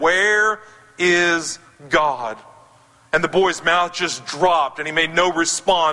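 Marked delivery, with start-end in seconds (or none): 0.0-2.4 stern, grave, acted-out voice. Retelling a pastor questioning an eight-year-old boy, imitating a stern pastor. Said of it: "the pastor sternly looked at him and said".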